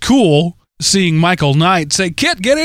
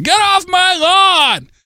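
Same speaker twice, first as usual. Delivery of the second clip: put-on very high, slow, cranky, grumpy old-man voice; 12 semitones higher than usual. The speaker admits turning into a grumpy old man again: mock grumpy old man. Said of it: "I turned into grumpy old man guy again".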